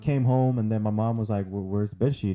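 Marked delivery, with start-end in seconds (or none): none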